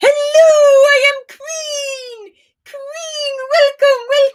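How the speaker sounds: loud, very high, booming queen voice. Mocking the king's wife loud enough for the approaching king to hear, loud mock-queen voice. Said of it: "loud enough so that he can hear".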